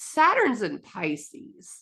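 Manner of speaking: playful, tongue-in-cheek tone with swooping inflection. Talking about astrology, naming a placement with a jokey inflection. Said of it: "with a little bit of a, a jokey kind of inflection".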